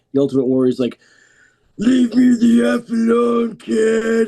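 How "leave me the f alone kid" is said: put-on very high, very slow, dismissive, drawn-out kid. Retelling a story about a wrestler snapping at a kid: Ultimate Warrior voice. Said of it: "that voice now, that was Ultimate Warrior".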